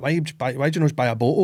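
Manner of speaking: usual speaking voice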